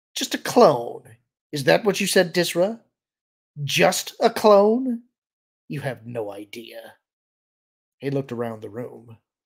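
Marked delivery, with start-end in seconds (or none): 0.2-7.0 loud, jeering, mocking delivery. Tyrs repeats what Dizra called him back at Dizra, mocking. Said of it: "he repeated mockingly".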